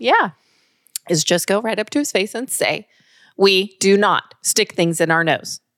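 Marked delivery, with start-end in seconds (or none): 3.4-5.6 firm, stern, voice not raised. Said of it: "stern but not yelling".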